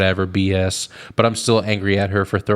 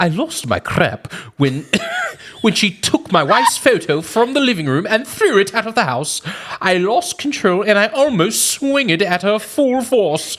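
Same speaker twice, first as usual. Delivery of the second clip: very high-pitched British accent reading; 13 semitones higher than usual. Reading a post aloud as asked, in a British accent. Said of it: "read it like a British person".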